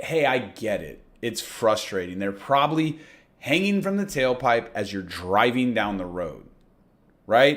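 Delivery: low, lightly sarcastic, gently teasing tone. Showing listeners how to soften a line, lightly sarcastic. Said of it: "Almost like you're being a little sarcastic".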